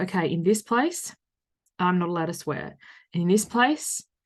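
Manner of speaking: ordinary talk, nothing marked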